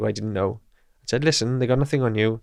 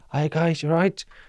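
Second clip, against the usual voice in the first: put-on drunk voice, higher; 6 semitones higher than usual. Retelling walking past police while pretending to be a drunk guy walking home: imitating his own fake drunk act. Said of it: "pretend that I'm just".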